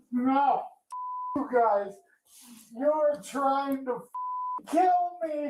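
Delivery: shouting. A patient being moved into a wheelchair yells at the people around him, yelling. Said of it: "let's don't yell at me".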